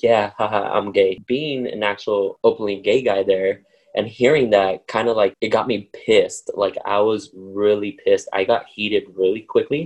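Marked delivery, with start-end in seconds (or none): 0.0-1.2 mocking laugh, laughing joker style. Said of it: "the guy will laugh and he will be like".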